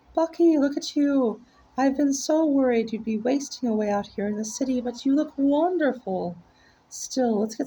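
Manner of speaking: very high, near-soprano, gushing motherly voice. Reading a story aloud, voicing a character's mother: very high soprano voice. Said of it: "I am purposefully doing his ma with a very as close to soprano as I can get".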